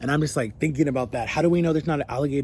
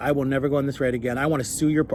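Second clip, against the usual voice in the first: ordinary talk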